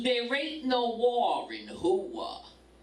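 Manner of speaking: put-on Brooklyn accent. Retelling what an older man said back to the speaker, in a Brooklyn accent. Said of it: "that Brooklyn voice".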